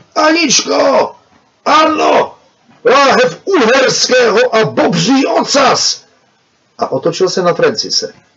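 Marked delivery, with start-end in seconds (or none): 2.9-6.1 calling out very loudly. Reading Pavel, who leans through the curtain into the corridor: calling out very loudly.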